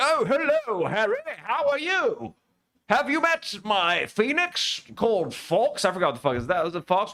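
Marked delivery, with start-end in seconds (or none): 0.0-5.8 fake, put-on British accent, high, very drawn out. Imagining an actor from Third Rock from the Sun greeting Harry, put-on British accent. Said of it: "doing a British accent".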